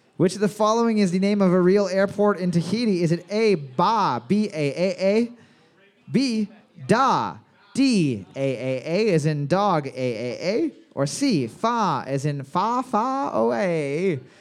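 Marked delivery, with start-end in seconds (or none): 12.9-14.2 put-on old-timey British accent, no r in far, away. Reading out a trivia answer option: old-timey british accent. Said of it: "if you were speaking in an old-timey British accent".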